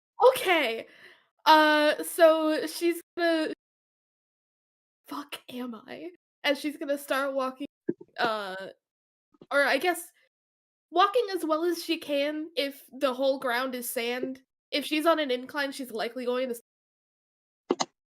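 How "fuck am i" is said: very quiet, hushed, slower whisper. Voicing a lost player character in scorching heat on sand, very quiet whisper. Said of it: "She's going to very quietly whisper".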